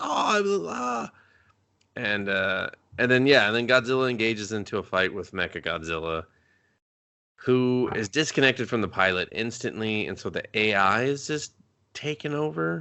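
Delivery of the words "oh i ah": high, put-on dazed voice. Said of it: "He's just like".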